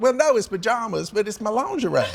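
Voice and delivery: voice pitched way up, very high. Retelling a phone call with his mother: imitating his mother's voice. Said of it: "this is really what she sounds like".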